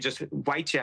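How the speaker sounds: ordinary delivery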